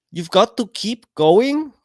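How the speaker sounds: bad put-on Indian accent. Imagining what her parents would say, in a failed attempt at an Indian accent. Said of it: "I can't do an Indian accent".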